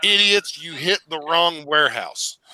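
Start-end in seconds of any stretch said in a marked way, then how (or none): none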